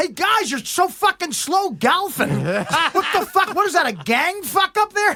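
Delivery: mock high-pitched hollering yell. Retelling Bob Uecker yelling at slow golfers ahead: imitating Bob Uecker yelling. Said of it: "he yelled, he goes".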